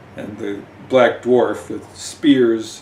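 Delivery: ordinary delivery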